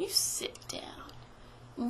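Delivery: soft, slow whispering.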